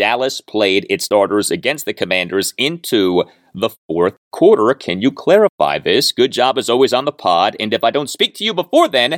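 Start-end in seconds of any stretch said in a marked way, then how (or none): none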